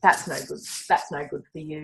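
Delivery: put-on harsh critical voice. Recalling the self-critical inner voice she used to have, imitating harsh self-critical voice. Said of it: "full on harsh self-critical voice".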